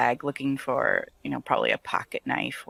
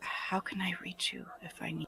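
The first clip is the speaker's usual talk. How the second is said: whispered, much quieter; 5 semitones higher, 13 dB quieter than usual. Shelley leans in to the man holding her hands and asks, whispering. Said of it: "She kind of leans in and whispers".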